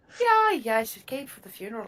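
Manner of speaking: fake put-on Irish brogue. Playing a gnome greeting a fellow gnome at a funeral, in a put-on irish accent. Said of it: "I don't know why I'm Irish".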